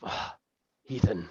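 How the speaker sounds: stunned, dazed mumble, barely audible. Voicing a stunned character answering a compliment: stunned mutter. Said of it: "she kinda just mutters".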